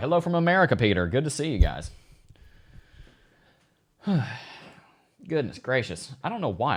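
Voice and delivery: breathless, winded, out of breath. Greeting peter and the audience, out of breath. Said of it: "I'm just completely out of breath right now".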